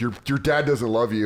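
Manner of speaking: ordinary talk, nothing marked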